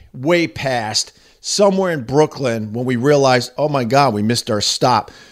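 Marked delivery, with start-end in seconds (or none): none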